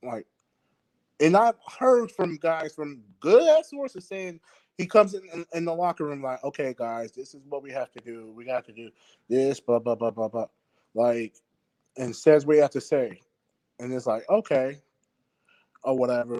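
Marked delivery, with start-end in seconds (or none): 6.4-10.5 mock flat monotone, lower and quieter. Speaker imitates how he addresses the guys in the locker room, mock monotone pep talk. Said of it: "You can't be so monotone every single time".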